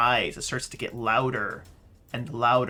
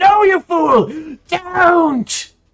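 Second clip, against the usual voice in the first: very high, very loud, slow, shrieking panicked scream; 13 dB louder than usual. Voicing a creature who sees the fireball coming: screaming in panic.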